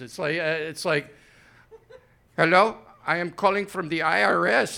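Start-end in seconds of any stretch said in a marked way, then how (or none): 2.4-4.8 put-on Filipino accent, slower. Describing a common scam phone call, imitating a Filipino accent. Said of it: "sounds like somebody from the Philippines".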